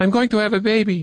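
abrupt, sudden blurt, very high. A girl, in front of her husband and another man, blurts out. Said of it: "the girl blurted".

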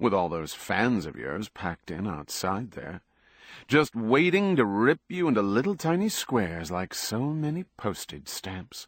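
ordinary delivery

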